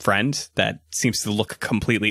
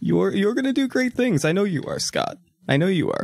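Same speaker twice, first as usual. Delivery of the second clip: put-on very high-pitched, slightly drunk, tipsy voice; 10 semitones higher than usual. Voicing Grandpa checking in before leaving: acting a little drunk. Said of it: "I'm also a little drunk".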